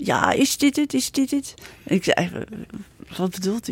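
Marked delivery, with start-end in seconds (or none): 0.0-1.5 really broad plat Amsterdams, pitched up. Retelling how an older lady came up while the speaker drilled holes, broad Amsterdam accent. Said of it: "die zei echt plat Amsterdams".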